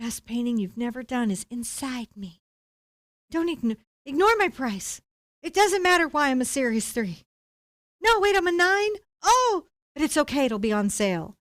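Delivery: tiny, little, tempting, luring voice. Describing a paint tube in the store that talks to the speaker, little tempting voice. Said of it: "a little voice comes out of the pigment tube and says".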